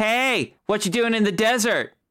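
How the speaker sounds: high-pitched, tiny imp creature voice. Describing a little red horned humanoid that runs up and speaks: little imp creature voice. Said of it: "little red humanoid with little tiny horns and a scorpion tail run up to you and go".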